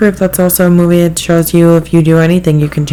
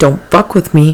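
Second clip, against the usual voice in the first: aggressive, tough trucker voice. Imagining what the dog Penelope would say if she could talk: aggressive trucker voice. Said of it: "she'd be like a trucker".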